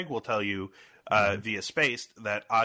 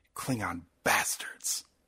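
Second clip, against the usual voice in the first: over-the-top somber, breathy, hushed whisper, acted out; 3 dB quieter than usual. Retelling how the line is repeated once more: somber William Shatner impression. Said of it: "but somberly".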